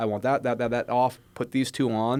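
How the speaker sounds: ordinary delivery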